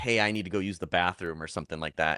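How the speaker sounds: plain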